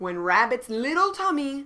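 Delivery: ordinary delivery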